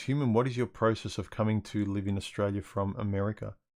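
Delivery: plain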